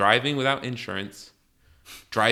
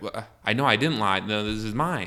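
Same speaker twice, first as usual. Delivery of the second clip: ordinary talk, nothing marked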